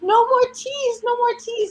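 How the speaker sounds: put-on very high wailing toddler cry. Speaker recounts how he cried out over the trees: imitating wailing. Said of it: "just started wailing and just going".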